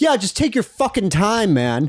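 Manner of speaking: imitated yelling, held back. Retelling what a mailman yelled at them: imitating a mailman yelling. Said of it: "I hear him yell out".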